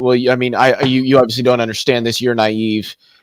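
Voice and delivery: ordinary talk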